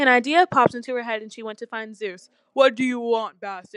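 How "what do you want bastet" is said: growled, growling voice. A narrator reads a god's question to a visitor in a story: growling. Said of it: "Zeus growled".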